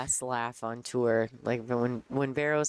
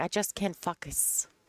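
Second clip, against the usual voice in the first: put-on French Canadian accent, higher pitch; 5 semitones higher than usual. Retelling what Vero said when the group asked what was wrong, imitating Vero's French Canadian accent. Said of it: "so her accent".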